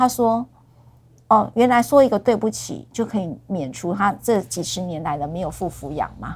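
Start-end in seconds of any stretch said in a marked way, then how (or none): none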